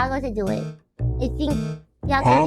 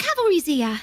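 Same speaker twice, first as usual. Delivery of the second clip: put-on cockney accent, higher pitch; 4 semitones higher than usual. Playing a game as Tracer with friends, quoting her line, Tracer impression. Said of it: "that's an amazing impression".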